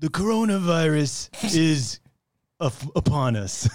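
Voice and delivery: put-on old New York Italian accent. Riffing on voices with friends, doing a Godfather-style impression. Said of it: "a little Godfather meets".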